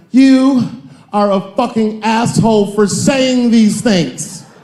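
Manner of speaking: mock, high, drawn-out screaming. A comedian retells an audience member's outburst at his show, imitating a woman screaming. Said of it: "she screamed out".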